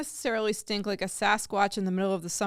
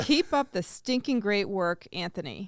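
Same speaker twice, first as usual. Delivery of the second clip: normal talking voice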